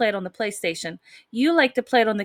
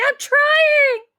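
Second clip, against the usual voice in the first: put-on screaming, higher and louder; 7 dB louder than usual. Retelling own reaction while being yelled at in a game: imitating own screaming. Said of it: "And I'm probably screaming".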